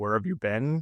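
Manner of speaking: ordinary talk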